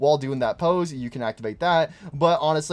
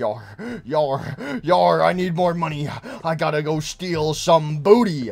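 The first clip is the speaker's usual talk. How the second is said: pirate voice with drawn-out yars; 3 dB louder than usual. Voicing what Foxy seems to say while running: pirate voice as Foxy. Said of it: "I like this run animation for Foxy's like".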